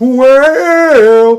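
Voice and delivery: cracking, breaking, very high, drawn-out voice. Recounting a match and quoting a sound heard: voice cracking. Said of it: "my voice just cracked a little bit".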